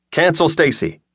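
eager, keen. Talking on the phone with Mom, the narrator agrees, eager. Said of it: "I agreed eagerly".

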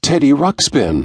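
thrilled, high-pitched, squawking burst of voice. Reading a story aloud, a character sees a surprise gift and squawks. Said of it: "he squawked".

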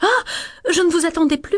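astonished, caught off guard. Intonation exercise to repeat, given the cue 'surprise': surprised.

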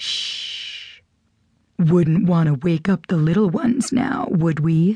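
gentle, hushed, soft, low voice. A masked man speaks to Amanda as their eyes meet: soft, low voice. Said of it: "say to her in a soft, low voice".

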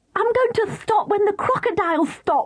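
very high, eager, excited shout. Katie calls out to Mr. Whisker during the crocodile ride: shouted. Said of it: "shouted Katie".

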